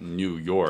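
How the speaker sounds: audible air quotes around "New York". Correcting the others' naming of the setting: audible air quotes on "New York". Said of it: "You can hear my air quotes".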